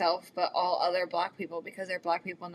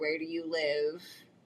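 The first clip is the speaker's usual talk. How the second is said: plain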